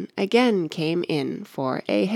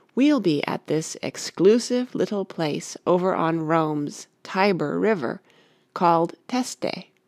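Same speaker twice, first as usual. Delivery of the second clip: ordinary delivery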